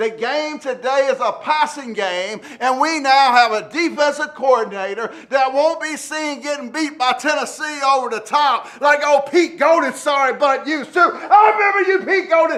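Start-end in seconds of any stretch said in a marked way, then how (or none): 11.0-12.6 loud, pitched-up, snapping, worked-up heated outburst. A podcast host recalls a former defensive coordinator, worked up and snapping. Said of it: "let me calm down".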